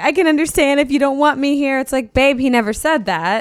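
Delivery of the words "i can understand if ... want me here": put-on crying, tearful voice. Retelling how someone spoke while crying: imitating someone crying. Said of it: "how she's, like, crying".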